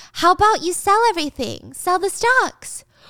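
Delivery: put-on high, dense, clueless playing-dumb voice. Retelling a woman playing dumb with her boss: imitating someone acting stupid. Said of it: "Gia's acting stupid".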